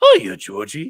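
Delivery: terrifying, creepy clown voice, high and loud. Discussing a remake, the speaker quotes Pennywise in his terrifying clown voice. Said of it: "the most terrifying clown voice ever, where he's just like".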